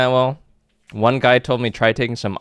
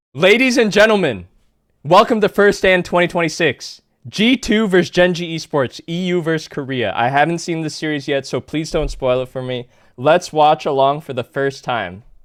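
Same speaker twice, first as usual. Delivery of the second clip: pitched-up read-aloud scripted delivery; 5 semitones higher than usual. Asked to say an intro on camera, the streamer reads it from a script. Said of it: "I was reading the script".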